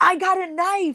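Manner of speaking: put-on screaming yell, very high-pitched and shrill. Retelling what a nearby man screamed when the speaker got stuck, retelling a scream. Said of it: "he's like screaming".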